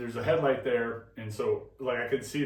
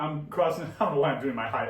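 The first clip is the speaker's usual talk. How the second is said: usual speaking voice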